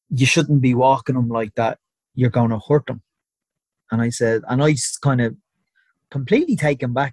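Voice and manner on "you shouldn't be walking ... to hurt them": ordinary delivery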